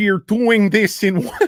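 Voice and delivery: acted Russian-sounding accent. Imitating an actor on set, accent sounding like Yakov Smirnoff. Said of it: "sounds like fucking Yakov Smirnoff when I do it".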